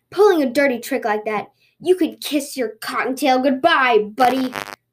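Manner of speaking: snarling, angry, taunting, menacing. A tanuki confronts a rabbit building a boat upstream, snarled. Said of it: "snarled the Tanuki".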